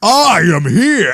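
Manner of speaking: loud, big, menacing, intimidating delivery. Trying out a voice for Baby Yoda after being asked: deepest, most intimidating Baby Yoda voice. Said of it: "deepest, more, most intimidating voice".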